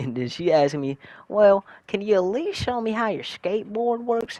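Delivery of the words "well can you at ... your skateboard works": put-on mimicked childlike strong Southern voice, higher. Retelling a woman's request to see the skateboard: imitating a strong Southern accent. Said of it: "strong ass, like, Southern accent".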